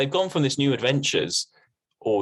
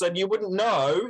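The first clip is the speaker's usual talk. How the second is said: deaf-sounding talk with no control of level; 8 semitones higher than usual. Showing the other speaker how it sounds, talking as if deaf. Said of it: "It would be like this".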